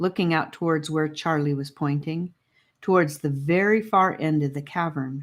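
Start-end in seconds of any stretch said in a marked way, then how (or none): none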